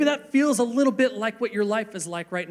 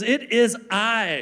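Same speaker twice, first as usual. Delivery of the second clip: put-on old-style Shakespearean stage accent and delivery. Retelling Jesus speaking in the middle of the storm, in a Shakespearean accent. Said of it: "in his best Shakespearean accent says".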